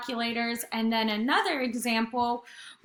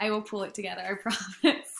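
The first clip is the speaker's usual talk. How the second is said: words spoken through stifled, fought-back giggles; 2 semitones lower, 4 dB quieter than usual. Explaining energy examples, the speaker apologizes for laughing at their dog, trying not to laugh. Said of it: "I can't stop laughing at my dog right now".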